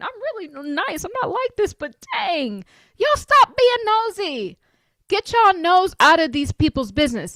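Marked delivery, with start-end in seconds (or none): 3.0-7.4 yelling, higher pitch. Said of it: "Sorry, I'm screaming".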